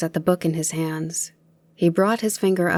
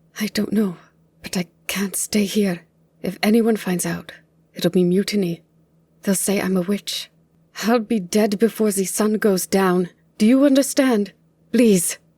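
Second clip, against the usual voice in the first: blubbering, hyperventilating, gasping, higher pitch; 3 semitones higher than usual. Afraid of being called a witch, she begs her companion to flee: blubbering, hyperventilating. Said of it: "[name] blubbered, / [name] blubbered, and she began hyperventilating again".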